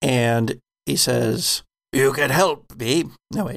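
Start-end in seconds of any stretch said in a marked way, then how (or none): 1.9-3.0 disembodied voice coming through a speaker. Voicing an armored figure whose voice comes out of a speaker: voice coming through a speaker. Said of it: "a voice comes out of a speaker".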